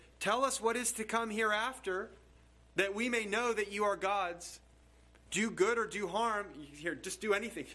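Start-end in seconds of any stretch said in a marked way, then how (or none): 0.2-6.5 put-on mocking, sneering, scornful taunting tone. Quoting the challenge to the false gods from the verse, acting out a mocking challenge. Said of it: "mockingly, you can hear the mockery in his voice".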